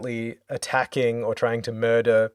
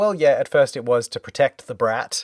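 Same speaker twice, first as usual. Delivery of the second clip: ordinary delivery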